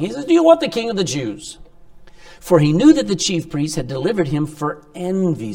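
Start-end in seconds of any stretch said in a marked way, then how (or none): 0.2-1.6 mock scoffing, taunting, pitched-up tone. Retelling Pilate's question to the crowd, imitating Pilate mocking. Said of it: "Now he's sort of mocking".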